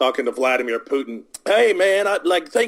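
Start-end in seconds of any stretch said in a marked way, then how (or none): 1.4-2.7 put-on rural Southern US accent, pitched up. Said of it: "I'm using that redneck accent for him".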